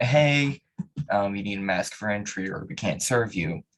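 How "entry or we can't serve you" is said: ordinary talk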